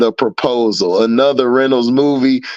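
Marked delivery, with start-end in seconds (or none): none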